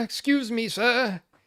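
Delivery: put-on British accent. Doing a put-on voice for Leon, who loves voices: put-on British voice. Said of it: "especially a British voice".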